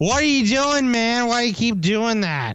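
put-on drunk talking. Retelling own words at a bar while very drunk: imitating own drunk speech. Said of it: "But to him, it sounded like".

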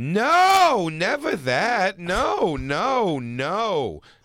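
mock elderly woman voice.

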